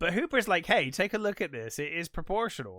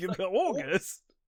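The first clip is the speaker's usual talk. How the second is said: mock aghast, shocked disbelief, higher; 4 semitones higher than usual. Retelling the mayor's reply in a film scene: imitating the aghast mayor. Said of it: "the mayor's just, like, aghast".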